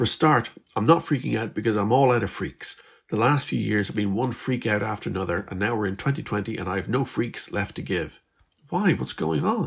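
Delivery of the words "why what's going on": worried, uneasy, anxious tone, high pitch. Narrating a story, voicing Liz, anxious question. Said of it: "Liz asked anxiously".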